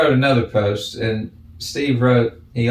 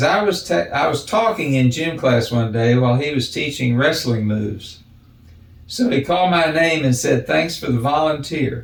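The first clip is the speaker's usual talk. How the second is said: ordinary talk, nothing marked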